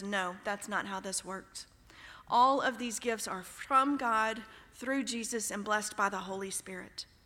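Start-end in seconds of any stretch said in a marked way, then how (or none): none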